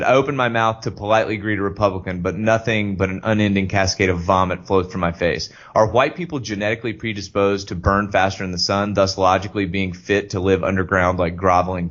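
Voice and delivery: normal talking voice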